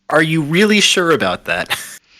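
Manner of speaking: loud, high shouted yell. A player speaks as their character during a fight, Avril yelling out. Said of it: "Avril's just gonna yell out".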